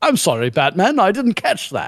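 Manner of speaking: put-on British accent in a virtual-assistant style voice. Retelling what Siri replied after being summoned: British Siri voice. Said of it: "asked all Britishy".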